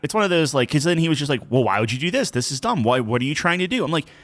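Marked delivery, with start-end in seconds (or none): 1.5-3.8 mock condescending tone, higher. Retelling how the other player questioned a doubled bet: imitating a condescending tone. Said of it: "doing it in a condescending way".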